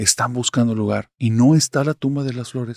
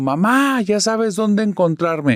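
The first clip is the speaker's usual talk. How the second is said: put-on high boy's shout, called out; 8 semitones higher than usual. Reading a story, a boy shouting to his mother while running away: shouting. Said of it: "gritó".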